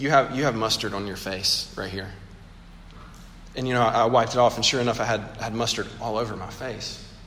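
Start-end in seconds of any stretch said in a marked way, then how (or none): 0.0-2.1 put-on kind but pointed tone, lower. Retelling what a woman told the speaker, a retold kind but pointed remark. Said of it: "very kindly but very pointedly".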